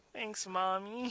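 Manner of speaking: slow, soft mock little-kid voice.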